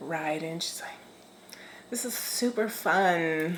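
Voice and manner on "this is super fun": put-on nonchalant airhead voice, quieter. Retelling what Carmen says riding in the quiet cab: nonchalant bimbo voice as Carmen. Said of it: "just really nonchalant and just playing the bimbo role".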